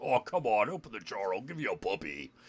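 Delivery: put-on demon voice, coaxing and pleading. Recounting a game session, the speaker voices the demon; demon voice. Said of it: "the demon just goes".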